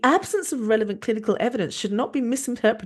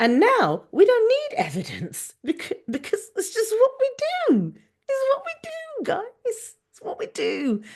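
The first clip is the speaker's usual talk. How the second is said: very high, shrill, squeaky, fuming angry rant; 12 semitones higher than usual. Speaker with a cold addresses the audience: squeaky angry voice. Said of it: "My voice is very squeaky because I have a cold and also because I'm very angry".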